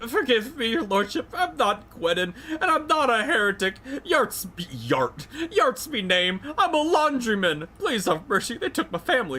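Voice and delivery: very high, bawling, sobbing begging voice. A man questioned about his confession begs his lordship, bawling and pleading. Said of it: "The man blanches and starts bawling".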